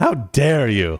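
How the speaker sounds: impassioned, reproachful delivery in a public-speech style. Joking back after an apology, doing a Greta Thunberg impression. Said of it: "my best Greta Thunberg impression".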